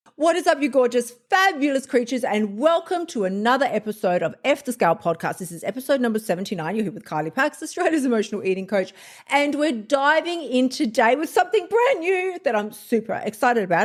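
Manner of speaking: super excited, a little too eager delivery. Welcome listeners to a new episode of your podcast, sounding a little too excited. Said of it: "as you can tell from my voice".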